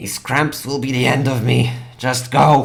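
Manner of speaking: angry, hissing dragon voice. Voicing a cramped dragon sending a player away: hissing angrily. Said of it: "hisses angrily and says".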